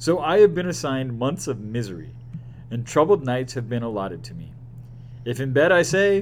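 plain

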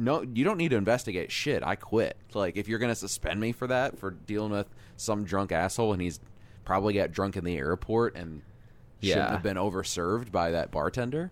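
ordinary talk

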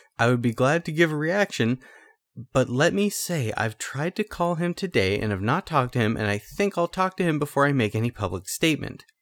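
ordinary talk

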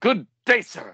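very high, loud exclamation. Asked to do the good day impersonation of the whole scene, impersonating it. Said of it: "Let's hear your good day impersonation".

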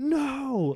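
loud, high yelling. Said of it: "He yells out".

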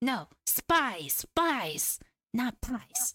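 "spies" with stressed s.

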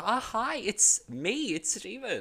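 very high, very slow, beaming, smiling phone voice. Showing how he answers the phone at work, big smile in the voice. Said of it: "I put on the biggest smile possible".

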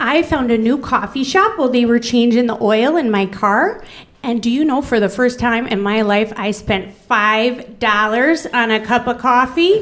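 put-on Fargo-style regional accent. Doing a woman's voice the way that makes the speaker happy: Fargo accent. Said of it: "I'm going to do her voice that way".

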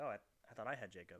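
ordinary talk

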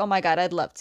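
normal talking voice

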